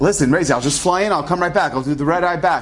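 ordinary delivery

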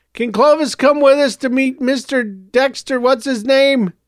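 high yell, calling out to another room. A boy calls down the hall to his mother, yelling. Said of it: "Joseph yelled down the hall".

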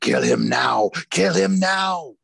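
very high, rough, shrill, rasping demon voice. Reading a story aloud, voicing the voice that urges the Saurus guard: demonic voice. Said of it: "Urged the demonic voice again".

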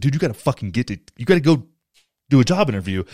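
normal talking voice

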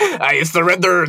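really bad put-on French accent, pitched high. Imagining him choosing a really awful French accent instead. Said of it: "that's my French accent".

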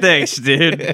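high-pitched, all-out, full-on sarcastic delivery. Repeating a friend's reply to a wine-shop tip: mock sarcastic thanks. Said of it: "you just full on sarcasm".

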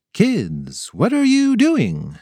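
slow, drawn-out, swooping, wary and suspicious tone. Watching the kids put on fake mustaches, their uncle asks suspiciously. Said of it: "asked Uncle Ned suspiciously".

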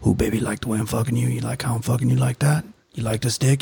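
low, continuous self-narrating delivery. Picturing a named man narrating during sex: imitating Alvin Mack narrating sex. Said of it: "picture Alvin Mack being like".

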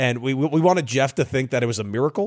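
normal talking voice

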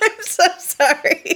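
giggling while talking. Opening a birthday bio segment and apologizing to the co-hosts, giggling. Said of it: "I just got the giggles".

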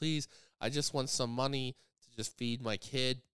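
mock crying in a woman's voice. Retelling a woman begging for money at a grocery store: imitating her crying plea. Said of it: "she's just crying and crying and crying".

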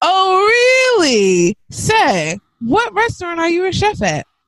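exaggerated, high sing-song with drawn-out "oh". Reading aloud a post's mocking question to a friend: exaggerated tone. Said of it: "in an exaggerated tone".

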